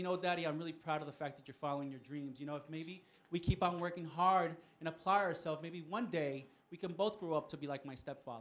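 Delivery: ordinary delivery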